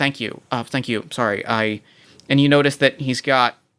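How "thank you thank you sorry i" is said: flustered cyberpunk character voice, lower. Voicing a flustered cyberpunk character who thanks the players and introduces himself: Carson, flustered cyberpunk character. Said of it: "this cyberpunk individual says".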